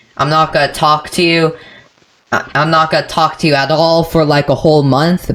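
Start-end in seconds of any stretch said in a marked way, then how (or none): none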